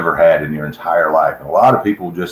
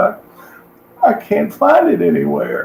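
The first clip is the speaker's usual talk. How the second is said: put-on sobbing like a child, higher. Retelling what a tearful stage volunteer said: imitating someone crying like a child. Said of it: "he was literally crying like a child".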